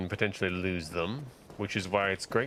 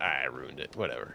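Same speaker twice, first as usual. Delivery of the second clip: ordinary delivery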